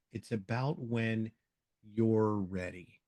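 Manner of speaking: very slow delivery with a long drawn-out pause. Showing how to embed words, pause before you're ready. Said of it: "I'm going to pause right there".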